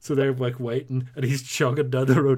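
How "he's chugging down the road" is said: ordinary talk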